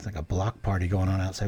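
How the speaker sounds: ordinary delivery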